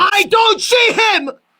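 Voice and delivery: very high, shrill shouting. On a call, searching the guest box for someone, yelling. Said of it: "now he's yelling".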